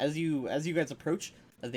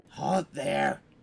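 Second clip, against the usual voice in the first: chittering, chattering, yelled voice. Game master voices a figure calling out to approaching players, a chittering yell. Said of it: "you hear a sort of a chittering yell out".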